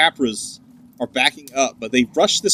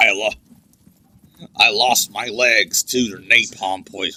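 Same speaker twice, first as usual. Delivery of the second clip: deep, low war-veteran character voice; 4 semitones lower than usual. Mid-bit, playing a Vietnam vet for the other speaker: Warhammer orc voice. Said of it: "that's a decent impression".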